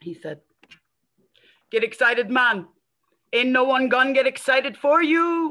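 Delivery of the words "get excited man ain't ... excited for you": put-on rough, not very good Jamaican accent. Quoting a buddy's advice to get excited: imitating Harris's Jamaican accent. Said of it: "so my accent not very good".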